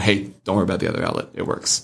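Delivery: put-on joking tone. Speaker repeats what they said to a familiar person who was leaving, retelling a joking remark. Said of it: "I just jokingly said to him".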